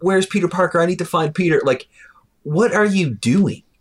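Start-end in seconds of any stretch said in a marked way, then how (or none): 0.0-1.6 loud, screaming, demanding tone.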